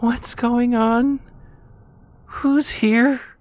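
imitated tiny whisper. Retelling how a husband hid under the blanket: imitating a tiny whisper. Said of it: "whispering in the quietest little voice".

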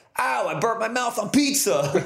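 very high New Jersey cab-driver voice and accent. Voice actor demonstrates one of the voices they had to do: New Jersey cabbie voice. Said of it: "which was basically the cabbie voice of just like".

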